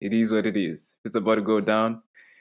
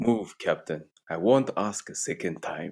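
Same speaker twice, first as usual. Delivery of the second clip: film-hero character voice; 3 semitones lower than usual. Quoting a favorite line to the other speaker, in a T'Challa voice. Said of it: "I'll just say it in a T'Challa voice".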